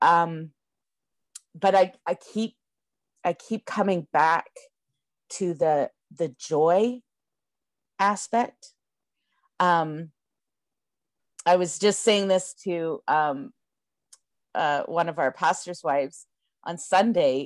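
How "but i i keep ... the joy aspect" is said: getting emotional, choked up. Speaking to a gathered community asking for a miracle, getting emotional. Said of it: "I'm going to get emotional here".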